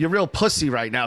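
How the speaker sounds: normal talking voice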